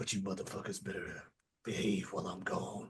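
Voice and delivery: soft, low, hushed, threatening whisper. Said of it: "he's whispering".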